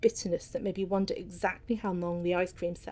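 plain reading voice

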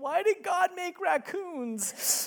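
mock tearful, high, very slow, drawn-out child voice. Retelling a four-year-old asking a question in the parent's lap: imitating a crying child. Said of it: "crying in my lap".

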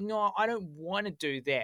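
plain

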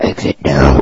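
very deep, scary movie monster voice. Speaker shows off their professional scary movie monster voice. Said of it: "That's my professional voice. Scary movie monster voice".

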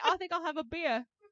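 bad put-on Australian accent. Asked to say it in an Australian accent, do a bad Australian accent. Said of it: "My Australian accent leaves something to be said".

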